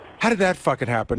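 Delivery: ordinary talk, nothing marked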